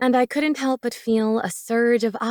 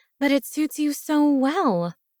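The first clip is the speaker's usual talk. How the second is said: sugary, teasing, feigned sweetness, pitched up; 5 semitones higher than usual. Teasing a man about a nickname, protesting with mock sweetness. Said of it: "I protested with mock sweetness".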